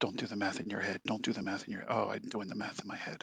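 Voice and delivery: muttering under breath. Playing a character working at a console, muttering under breath. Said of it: "just under my breath".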